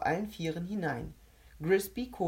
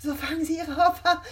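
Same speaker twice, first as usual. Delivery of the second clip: shrill, very high, very loud tittering giggle; 11 semitones higher, 8 dB louder than usual. While a woman doubles over, a man explains with a giggle: giggling. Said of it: "kicherte Kovac".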